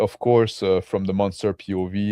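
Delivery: normal talking voice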